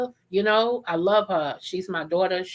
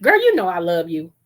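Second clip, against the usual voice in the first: put-on casual offhand tone, said louder; 5 dB louder than usual. Telling listeners how mama would say it, imitating mama saying it in passing. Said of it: "she would say it like this ... in past".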